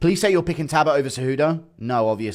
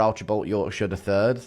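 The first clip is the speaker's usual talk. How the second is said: normal talking voice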